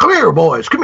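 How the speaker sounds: put-on creepy, scary old farmer voice. Retelling a film scene where three boys pass the farmer, in John Carradine as scary old farmer. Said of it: "as an old scary farmer".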